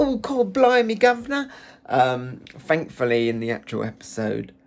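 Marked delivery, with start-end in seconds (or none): 0.0-1.5 very high, put-on Victorian cockney little boy voice. Mocking an accent from an episode, sounding like a little victorian boy. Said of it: "I sound like I'm a little Victorian boy".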